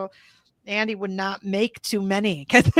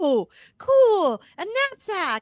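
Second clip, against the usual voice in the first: mock very high, very slow, sing-song thrilled excitement; 10 semitones higher than usual. Retelling someone opening a knapsack gift: imitating someone acting excited. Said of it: "genuinely acted excited about getting a knapsack".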